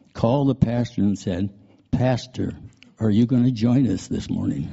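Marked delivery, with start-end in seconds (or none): 1.9-4.7 soft, quiet put-on man's voice. Telling how Jim Merrick called the pastor who didn't show up: Jim Merrick's quiet voice. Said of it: "in his quiet voice".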